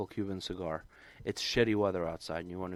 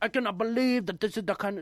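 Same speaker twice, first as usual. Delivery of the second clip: shrill, very high, indignant put-on Chinese accent; 14 semitones higher, 6 dB louder than usual. Retelling an angry customer's complaint about a fee: imitating a customer in a Chinese accent. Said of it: "I'm doing Chinese ac-".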